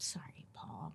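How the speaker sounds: unvoiced, soft whisper.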